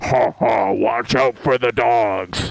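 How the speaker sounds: deep demon voice, dragged out slow. Retelling a voice from above that came out of nowhere, in a demon voice. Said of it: "like this sort of like demon voice".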